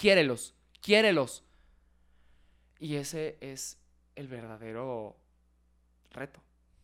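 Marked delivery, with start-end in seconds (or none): 0.0-1.4 repeated shouting at full volume. Retelling what a teacher said during an exercise: imitating someone shouting. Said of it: "me lo decía gritando".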